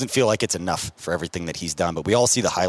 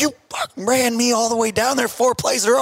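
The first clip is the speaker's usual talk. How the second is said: mock very high-pitched shouting yell; 4 dB louder than usual. Retelling a tired player's answer to his screaming coach, imitate the player yelling back. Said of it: "he just yells back".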